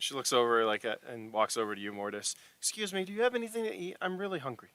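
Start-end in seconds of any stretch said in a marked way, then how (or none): 2.6-4.6 put-on very high, small little girl pleading voice. Voicing a hungry four-year-old girl begging strangers for food: little girl voice. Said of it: "she's a little girl, like, at four".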